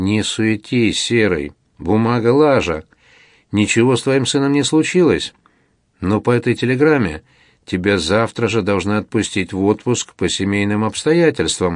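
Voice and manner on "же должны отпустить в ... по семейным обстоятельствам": ordinary delivery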